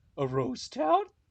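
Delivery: very high, loud cartoon dog voice, ghost said roast. Acting out a scene of the cartoon: yelling Scooby-Doo voice. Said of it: "Scooby and Shaggy just yelling".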